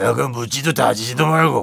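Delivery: put-on scratchy voice. Showing how the impression should sound: Lee Soon-jae impression with scratchier throat. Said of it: "이렇게 더 긁어야 돼요".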